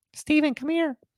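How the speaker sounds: eerie, creepy mom voice, very high-pitched. Describing a creepy creature, the speaker performs it calling out in your mom's voice. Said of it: "it calls out in your mom's voice".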